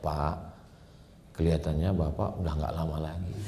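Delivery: very quiet, soft, low, gentle doctor voice. Quoting how a doctor talks to a man: speaking softly like a doctor. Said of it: "Dia ngomong lembut aja".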